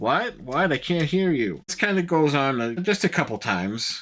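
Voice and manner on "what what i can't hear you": usual speaking voice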